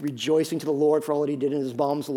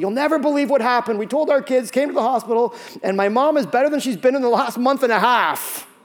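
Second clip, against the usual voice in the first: mock cheerful, upbeat, pitched-up delivery; 9 semitones higher, 6 dB louder than usual. Retelling a surprising phone call from the son: imitating a caller, not sad. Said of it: "instead of the sad voice".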